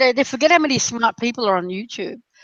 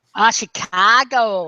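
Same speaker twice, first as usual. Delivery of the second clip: poor put-on American Chicago accent. Joking about Americans, he says a city name in a bad American accent. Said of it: "I don't do an American accent very well".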